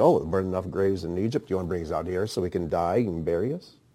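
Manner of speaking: put-on scornful, taunting, derisive delivery. Speaker acts out what a group said to a man: imitating a mocking tone. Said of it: "So they have this mocking tone".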